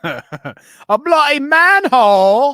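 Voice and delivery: very loud, shrill fake British accent. Joking around about sounding british, repeating a phrase in a fake british accent. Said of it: "that's the only way I know how to get British".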